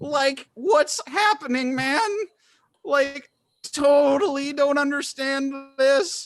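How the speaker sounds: very high saturday-morning cartoon voice. Describing the voice that comes from a potted plant: Saturday morning cartoon voice. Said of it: "similar to a Saturday morning cartoon voice".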